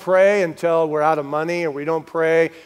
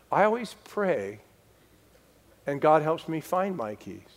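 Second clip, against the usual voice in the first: serene, calm, soft and even-keeled; 7 dB quieter than usual. Speaker retells his wife's reply while he searched for his keys, imitating her calm. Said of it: "And my wife—she just said so calmly, she said".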